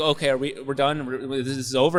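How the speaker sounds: plain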